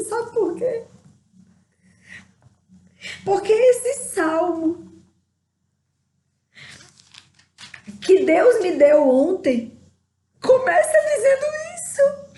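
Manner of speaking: crying with joy. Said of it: "Eu tô chorando de alegria".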